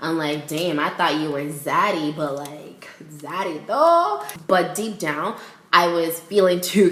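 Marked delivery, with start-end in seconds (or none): 0.5-4.2 needling, mocking tease with big pitch swoops. Retelling taking shots at him, imitating making fun of him. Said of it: "making fun of him".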